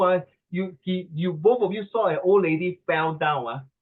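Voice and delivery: ordinary talk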